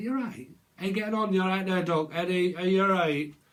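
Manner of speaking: loud, laid-on, put-on northern English accent. Talking about yorkshire, showing how northern speakers talk: northern english accent. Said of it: "when you hear the northern accent, they do talk like that".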